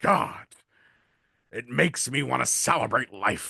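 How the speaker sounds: put-on wrestling announcer voice. Joking with a co-host about a new look, sounding like Vince McMahon. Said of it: "You sound like Vince McMahon".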